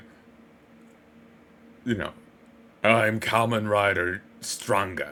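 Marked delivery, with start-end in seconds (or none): 2.8-5.1 slow, grand, heroic proclaiming delivery.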